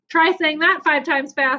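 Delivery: plain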